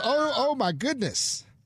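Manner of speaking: imitated Southern accent. Quoting an older lady met in a restroom, imitating a Southern accent. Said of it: "That was an accent, though".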